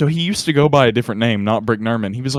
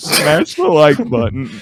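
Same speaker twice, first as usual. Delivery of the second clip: put-on fake crying, higher pitch and louder; 3 semitones higher, 5 dB louder than usual. Retelling a TikTok sketch by Brick Nerman, imitating Brick Nerman crying. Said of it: "and then he starts crying".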